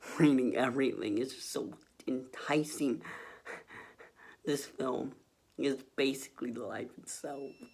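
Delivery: teary, moved voice on the verge of tears. Talking about a film review while reading it, tearing up. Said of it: "I am tearing up while reading this review".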